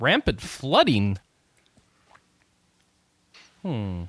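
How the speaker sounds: taken-aback, surprised tone. Hearing that a guest may miss Christmas because of flooding, reacting surprised. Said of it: "Why do you sound so surprised?".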